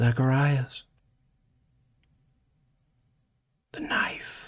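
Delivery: sudden eerie whisper. Narrating a voice that repeats to someone who stops to listen, soft whisper. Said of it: "you hear a whisper".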